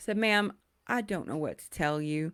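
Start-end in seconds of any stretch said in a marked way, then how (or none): none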